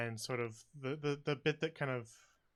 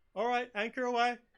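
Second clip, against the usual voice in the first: very high-pitched, loud yell; 11 semitones higher, 7 dB louder than usual. Narrator voicing Violet calling out to the crew, Violet yelling. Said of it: "Violet yell again".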